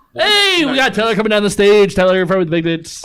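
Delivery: put-on loud, high auctioneer patter. Doing a joke stage mc announcement when asked: put-on auctioneer voice. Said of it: "you sound like you're, like, auctioning off something".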